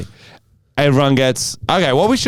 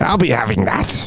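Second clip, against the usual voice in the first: much lower put-on goblin voice; 2 semitones lower than usual. Describing putting things in their bag, goblin voice. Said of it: "laughing maniacally in my goblin voice".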